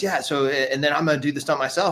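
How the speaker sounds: super excited, eager, thrilled gushing. Retelling an impression of Tom Cruise planning his own stunt: imitating super excited Tom Cruise. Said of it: "he's so super excited".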